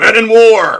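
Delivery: very loud, very high American drill-sergeant yell. Reading the Men in War liner notes aloud, American drill instructor voice. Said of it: "lose my affected English accent and become an American drill instructor".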